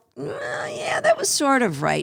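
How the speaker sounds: high, hesitant, doubtful, lukewarm, half-hearted tone.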